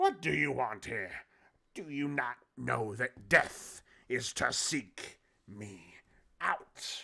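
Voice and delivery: snarled voice. Voicing a ghostly elf woman confronting the players: snarling. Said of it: "she snarls".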